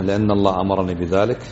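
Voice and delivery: ordinary talk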